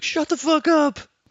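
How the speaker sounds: shrill, very high yell. Suggesting what to yell out the window at loud workers: pretend yelling at noisy workers. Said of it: "Just yell at the window".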